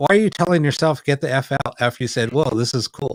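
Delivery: normal talking voice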